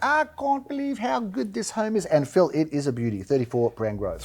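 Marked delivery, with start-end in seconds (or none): 0.0-2.1 very high, showy put-on South African accent. Quoting what a listing agent said about a property, imitating Glenn Bricker's South African accent. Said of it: "in his finest South African accent".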